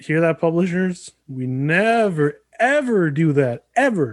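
mocking tone. Telling publishers that the speakers never pirate games: sarcastic. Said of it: "You're saying it sarcastically".

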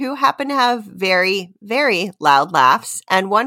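ordinary delivery, nothing marked

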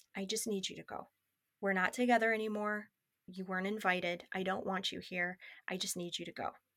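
quiet muttering under the breath. Retelling what she told him back then, imitating words said under breath. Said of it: "kinda under my breath just telling him".

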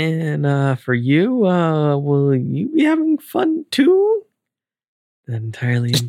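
seductive low voice. Reading a hard script aloud, trying a sexy voice. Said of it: "Is that your sexy voice?".

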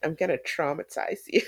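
put-on sassy voice. Speaker quoting a line from a guy she's crushing on, mimicking a sassy line. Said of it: "throw out that sassy little line".

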